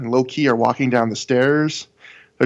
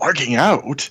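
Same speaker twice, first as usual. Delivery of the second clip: acted weak-voiced offended muttering. Retelling a favorite scene from the show, imitating Low-Key's offended under-breath mutter. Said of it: "in this kind of offended, kind of weak-voiced, under his breath almost goes".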